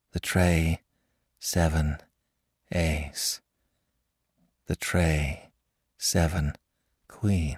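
flat, monotonous murmur. A man confined in a hospital repeats the same words to no one, monotonous murmur. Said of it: "murmuring in a monotonous tone".

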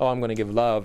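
ordinary delivery

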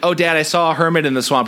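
ordinary talk, nothing marked

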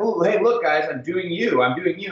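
pointed, passive-aggressive tone. Retelling a friend's remark while drinking: imitating a passive-aggressive remark. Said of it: "And it's passive aggressive".

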